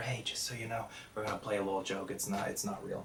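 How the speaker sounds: very soft, reassuring whisper.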